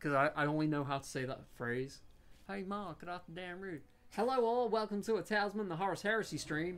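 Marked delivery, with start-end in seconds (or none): 2.5-6.8 put-on high-pitched, country southern yokel accent. Streamer opening a Talisman stream, Cletus voice. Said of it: "How do I channel Cletus Slackjawed Yokel?".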